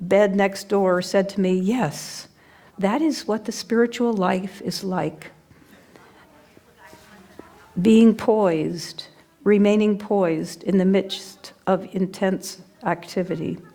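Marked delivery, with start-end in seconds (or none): none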